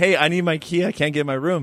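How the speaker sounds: ordinary talk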